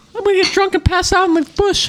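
squeaked out way up high. Speaker plays a recording sped up, in a Mickey Mouse voice. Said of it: "Give me a Mickey Mouse voice".

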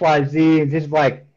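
usual speaking voice

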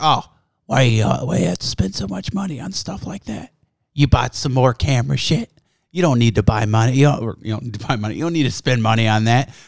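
mock irritated, pissed-off nagging complaint. Retelling a friend's complaint about camera gear spending: imitating Logan pissed off. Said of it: "he gets all fucking pissed off about it".

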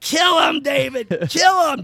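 very high, shrill, piercing scream. Telling how some lady kept screaming at David, retelling a lady screaming. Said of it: "Just screaming".

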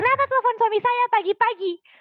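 mock angry scolding, pitched way up high. Recounting a phone call where the woman answering scolded her, imitating someone scolding. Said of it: "dia udah marahin gue".

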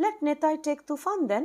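tentative, hesitant voice, very high-pitched. Asked whom to send on an errand, a man answers; hesitant. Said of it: "Ananta said hesitantly".

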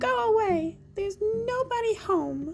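frightened squealing. Narrator reading the little pig's reply as the wolf knocks: scared squeal. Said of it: "The pig was so scared he squealed".

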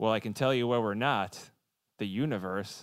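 poorly done politician voice, surly and grumpy. Urged by a co-speaker to say the quote like him: Al Gore impression. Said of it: "But say it like him".

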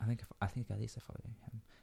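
hushed, very quiet whisper. Chatting with others about who follows whom on Twitter: whispering. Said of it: "Why are you whispering?".

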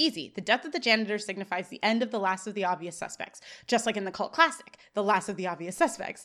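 ordinary talk

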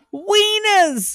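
shrill, very high, loud acted holler. Retelling a movie scene of the paper's owner selling wieners: imitating a man hollering. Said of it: "he just keeps hollering about it".

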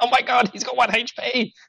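very high, stretched-out, drawn-out put-on yell. Retelling two players shouting during a boss fight: imitating friends shouting. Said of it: "Rob and Tyler just shouting at me".

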